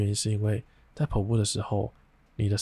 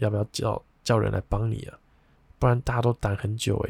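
ordinary talk, nothing marked

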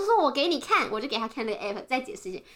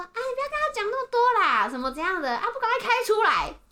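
put-on raised voice, loud and pitched up; 9 semitones higher than usual. Retelling what the husband said from behind the car: imitating someone saying it loudly. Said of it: "就是很大声的说".

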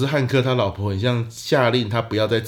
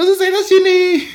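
mock effeminate yell, much higher, louder; 9 dB louder than usual. Retelling how a guard shouted at sleeping passengers, retelling a yell in effeminate voice. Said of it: "为什么用这么娘的声音".

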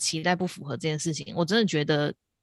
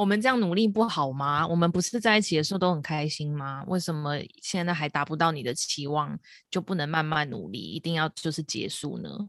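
normal talking voice

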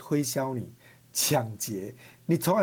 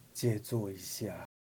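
put-on listless, strengthless, feeble, very hushed low voice; 6 semitones lower, 9 dB quieter than usual. Retelling a stranger's late-night reply through the car window, imitating a feeble voice. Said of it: "他就很有气无力跟我说".

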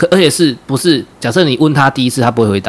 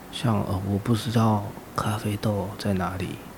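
hushed, hesitant, timid, barely audible half-whisper; 3 semitones lower, 14 dB quieter than usual. Acting out a junior answering a senior: imitating a timid half-whisper. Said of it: "很小声哦。".

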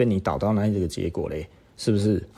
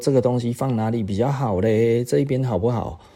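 very cordial, polite, kindly, friendly tone; 3 semitones higher than usual. Retelling how a man asked the company boss's mother, imitating a kind, friendly ask. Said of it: "很亲切地问了里面的主人".

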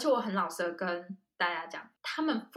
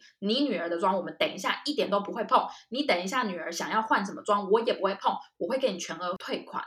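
usual speaking voice

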